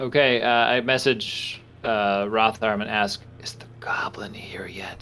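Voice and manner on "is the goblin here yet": very quiet, breathy, whispered, questioning tone. A player sends a message to another character in the game: whispering. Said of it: "I don't know why I'm whispering".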